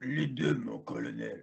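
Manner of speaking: rough, creaky, raspy tough-guy soldier voice. Answering a question about the next match with a John Rambo impression. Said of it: "une imitation de John Rambo".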